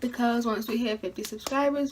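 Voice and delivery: ordinary talk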